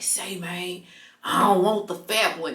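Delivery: put-on loud whisper. Retelling what a guy said to his friend: imitating a loud whisper. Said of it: "it was a loud whisper".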